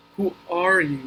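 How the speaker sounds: sleepy, languid voice. At last a caterpillar speaks up, in a languid, sleepy voice. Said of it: "addressed Alice in a languid, sleepy voice".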